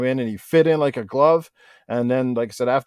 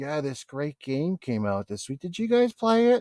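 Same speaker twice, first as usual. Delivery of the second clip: bored, enthusiasm-free, uninterested delivery; 2 semitones higher, 5 dB quieter than usual. Showing how an uninterested podcaster announces a new game: imitating an uninterested delivery. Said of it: "That don't sound like you're interested".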